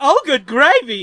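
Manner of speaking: very loud, bursting, high-pitched belted exclamation. Showing the key phrase for getting into an Ed Wynn voice. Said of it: "to get into Ed Wynn's voice".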